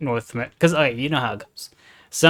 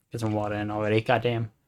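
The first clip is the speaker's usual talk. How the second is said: ordinary talk, nothing marked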